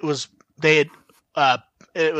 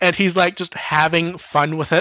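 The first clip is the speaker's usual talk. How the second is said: normal talking voice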